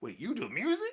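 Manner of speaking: squeaky, scruffy, very high-pitched voice. Retelling how someone in the back spoke up while music was shown off, squeaky, scruffy Zach voice. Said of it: "squeaky, scruffy voice".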